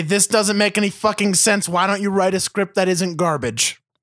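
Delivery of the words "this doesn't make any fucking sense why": usual speaking voice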